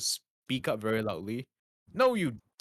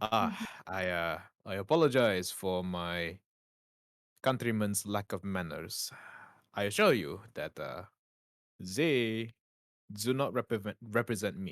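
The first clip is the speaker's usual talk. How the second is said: very formal speech, lower; 3 semitones lower than usual. Voicing an apologetic stranger who bows to the group: speaking very formally. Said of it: "he starts speaking very formally".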